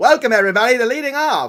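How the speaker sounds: put-on high, loud, old-timey radio announcer voice. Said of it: "old-timey radio announcer voice".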